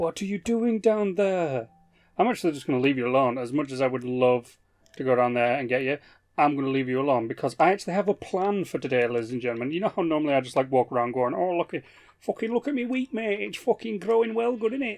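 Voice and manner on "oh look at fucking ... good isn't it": put-on, high, pitched-up Scouse accent. Showing the audience how he normally walks around talking, put-on Scouse accent. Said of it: "listening to a scouse".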